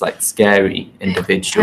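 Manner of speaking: plain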